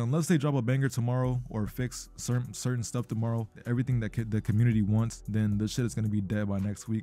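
normal talking voice

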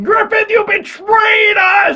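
mock very high, outraged, furious screaming. Retelling screaming at a game character together with their wife, re-enacting a scream. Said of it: "My wife and I are literally screaming".

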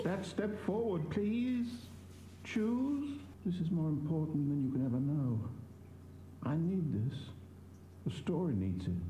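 sad, mournful tone. Pleading with the player to choose a step forward, sounding sad. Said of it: "He sounds so sad".

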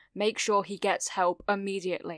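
ordinary delivery

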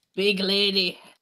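booming character voice. Voicing a character's line during a game scene, in a booming voice. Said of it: "in his booming voice".

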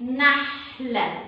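very slow, drawn-out "model". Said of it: "هنشيل النقطة، هتبقى".

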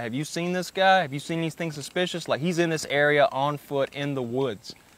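plain

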